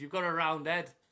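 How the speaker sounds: play-acted, high-pitched, shouted heckling. Comic on stage retells a man in the crowd heckling, retelling a heckler's shout. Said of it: "he just shouts at me".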